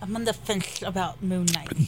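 mocking, put-on nerdy voice. Giving an opinion on a show while talking with others, in a nerd voice. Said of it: "Don't do your nerd voice".

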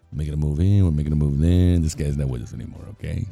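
put-on very low, low-energy, low-key mobster accent. Asked for it, the speaker acts out what a man said in a low Goodfellas mobster accent. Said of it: "give me your Goodfellas accent".

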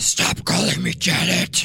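very deep, very low, raspy demon voice. Acting a scene, a demon speaks when called janet, raspy demon voice. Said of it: "They're really raspy".

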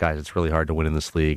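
soft, unclear mumbling through every word. Imitating a man who used to mumble everything in his comments: mumbled. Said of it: "he used to mumble everything".

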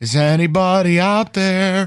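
put-on late-night radio host voice. Getting no answer from the guys, pretending to do radio at 3 a.m., pretend 3 a.m. radio host voice. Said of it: "I'll pretend I'm doing radio at 3 a.m".

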